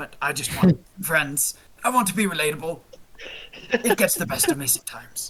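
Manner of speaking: clumsy, ill-at-ease, awkward voice. Voicing a dragonborn character in a role-play scene, awkward dragonborn voice. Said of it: "Awkward dragonborn".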